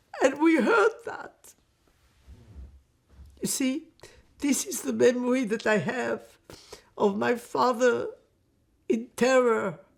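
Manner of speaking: speaking through tears. Recalling a father's nightmares of the gas chamber, through tears.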